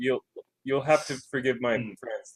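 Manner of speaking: stilted, awkward, hesitant, halting stop-start delivery. Imagining excusing their rambunctious friends to someone: awkward, halting delivery. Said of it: "I'm gonna kind of awkwardly and haltingly like be like".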